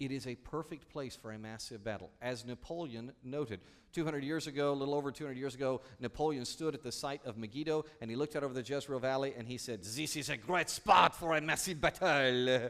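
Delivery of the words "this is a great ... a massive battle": put-on loud, slow speech in an Italian accent. Quoting Napoleon looking out over the valley: Napoleon with an Italian accent. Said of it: "he spoke in an Italian accent".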